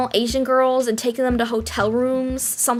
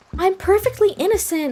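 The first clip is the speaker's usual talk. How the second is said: ditzy, airheaded voice, pitched higher; 7 semitones higher than usual. Retelling what a classmate said: imitating an airheaded girl. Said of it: "she talked like this".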